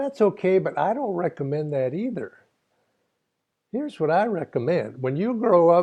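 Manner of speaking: put-on high-pitched Texas accent. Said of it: "say this with a Texas accent".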